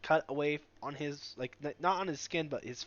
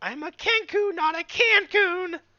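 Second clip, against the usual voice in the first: shouting in character voice, higher and louder; 9 dB louder than usual. Voicing a Kenku who yells out at the party: yelling as a Kenku. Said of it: "He just yells out".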